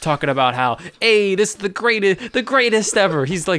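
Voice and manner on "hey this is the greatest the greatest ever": bad, overdone Italian accent, pitched high. Imitating Anthony Scaramucci arguing with reporters: bad Italian accent as Scaramucci. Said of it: "very Italian. I can't really do it".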